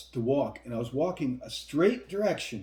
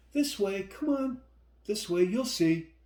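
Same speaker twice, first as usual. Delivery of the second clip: put-on young woman's voice, pitched up; 7 semitones higher than usual. Retelling what a young woman told the speaker: put-on young woman's voice. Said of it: "I'm trying to do a young woman's voice".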